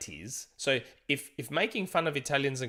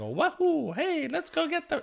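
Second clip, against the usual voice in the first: full video-game character voice, very high-pitched; 4 dB louder than usual. Explaining why a movie couldn't use it: Charles Martinet Mario voice. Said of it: "you can't have Charles Martinet going".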